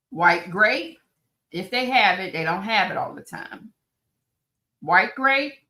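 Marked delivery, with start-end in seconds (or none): 4.8-5.5 high, yelled, shouted delivery. Giving a recipe to viewers, yelling. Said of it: "I'm yelling. I'm sorry".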